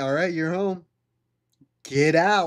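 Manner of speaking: blunt, rude delivery. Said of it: "I don't tell her to get out".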